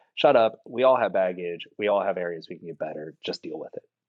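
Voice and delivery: ordinary talk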